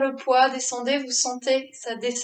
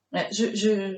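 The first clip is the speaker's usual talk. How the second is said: low, halting stammering mumble, words tripping; 4 semitones lower than usual. Guiding listeners through a stretch, the speaker stammers while straining along with them. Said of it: "je bégaye, je bredouille, mais parce que je souffre".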